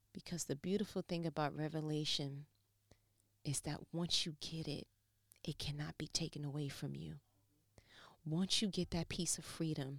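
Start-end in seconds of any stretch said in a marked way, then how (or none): 0.1-7.1 near tears, holding back crying. A speaker talking to listeners, holding back tears. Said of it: "I'm trying not to cry right now".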